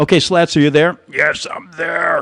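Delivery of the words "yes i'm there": muffled put-on voice, higher pitch. A host interviews Slats Grobnik, who hides his identity; muffled Slats Grobnik voice. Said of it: "he's got a muffled voice".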